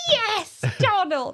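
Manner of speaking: put-on high delighted toddler voice. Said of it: "And she was like".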